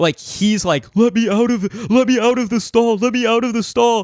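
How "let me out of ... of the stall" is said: play-acted panic, high, frantic, with repeated words. Retelling a friend's plea to be let out of the stall: imitating a friend freaking out. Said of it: "So he starts freaking out".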